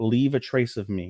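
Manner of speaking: put-on quiet voice, under the breath. Retelling a character's line as the two are about to separate: imitating someone saying it quietly under her breath. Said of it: "under her breath, really quietly".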